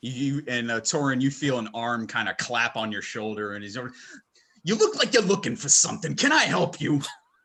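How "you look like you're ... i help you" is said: clumsy, bad put-on Brooklyn accent. A game master voices a character who approaches the players, in a brooklyn accent. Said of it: "He's got a Brooklyn accent".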